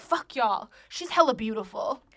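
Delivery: acted, mock-serious tone. Retelling what a drunk man said once he got all serious, mock-serious. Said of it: "he gets all serious".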